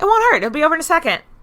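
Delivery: mock soothing tone, very high, loud, squeaky.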